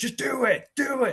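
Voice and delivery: play-acted, very high, pressuring, badgering tone. Describing a man bearing down on a kid, imitating his pressuring. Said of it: "talking like bearing down on this poor kid".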